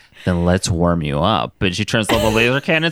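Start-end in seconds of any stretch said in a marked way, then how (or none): 0.3-1.6 low, sexy voice. Speaker retells a scene where Storm answers Logan, Storm in a very sexy voice. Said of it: "Storm in a very sexy voice is like".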